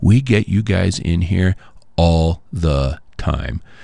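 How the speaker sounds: put-on, slow, extremely judgmental drawl. Retelling what a man said to the speaker, imitating a judgmental tone. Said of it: "in the most judgmental tone I think I've heard in my life".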